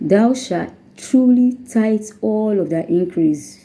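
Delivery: truly stressed, slow reading. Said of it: "We are laying emphasis on the word truly".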